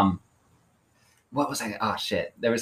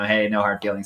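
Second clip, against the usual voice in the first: ordinary talk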